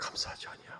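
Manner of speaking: soft, hushed whisper.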